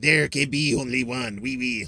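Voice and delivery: heavily laid-on, put-on French accent. Quoting the Highlander hero's line from the movie: imitating a French accent. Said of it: "he's got a French accent".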